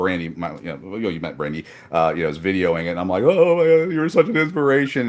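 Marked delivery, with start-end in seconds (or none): 3.2-5.1 very high, very loud, weepy, tearful blubbering gush. Retelling what the speaker said on meeting a man he admired: retelling own blubbering. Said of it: "I was sitting there blubbering".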